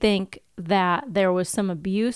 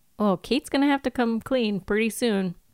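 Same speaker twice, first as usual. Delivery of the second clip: ordinary delivery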